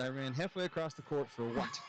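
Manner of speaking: ordinary talk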